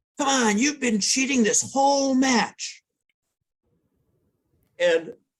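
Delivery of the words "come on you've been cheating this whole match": mock sudden, very high, shrill shrieked scream. Retelling another player's cheating accusation mid-match: imitating someone screaming. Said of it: "screamed out".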